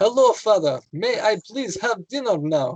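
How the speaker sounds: high, put-on Polish accent, polite English. Retelling how he spoke to his family at home, Polish accent. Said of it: "I spoke English in a Polish accent".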